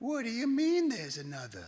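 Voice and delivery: put-on Bronx accent, very high and swooping. Speaker retelling grandmother's reply to the doctor, in her best bronx accent. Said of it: "in her best Bronx accent".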